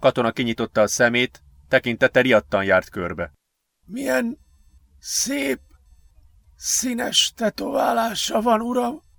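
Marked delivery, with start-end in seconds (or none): 3.9-9.0 high, faint, hushed mumble, drawn out and slow. A wounded, dying soldier speaks to Ben, muttering.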